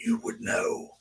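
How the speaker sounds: high, soft creepy ghost-voice whisper. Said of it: "this creepy ass voice like".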